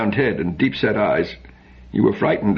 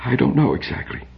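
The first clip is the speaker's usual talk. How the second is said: high, hushed whisper, barely voiced; 6 semitones higher than usual. Narrator reads a father answering his daughter, whispering. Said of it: "he whispered".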